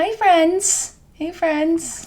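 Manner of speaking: very high, slow teacher-style voice. Teasing the other speaker for saying friends: imitating a teacher's greeting. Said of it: "That's like the teacher word".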